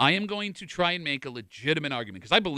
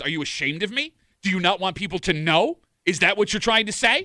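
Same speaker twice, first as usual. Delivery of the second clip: mock furious, loud, high-pitched angry voice; 5 semitones higher, 4 dB louder than usual. Telling co-hosts about a couple arguing in line, imitating a woman speaking loudly. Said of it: "I like when she's loudly saying".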